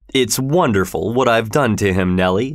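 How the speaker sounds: ordinary delivery, nothing marked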